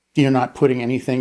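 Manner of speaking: ordinary talk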